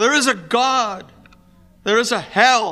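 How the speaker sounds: mock strong voice, terrified, loud, high. Retelling a dying father's last words, imitating a strong voice laced with terror. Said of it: "in a very strong voice, a voice laced with terror".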